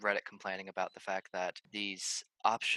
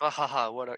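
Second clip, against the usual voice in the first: put-on laughing fighter voice, higher and louder; 4 semitones higher, 7 dB louder than usual. Retelling a character's line at the end of a fight: imitating Kitana laughing. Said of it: "He's laughing".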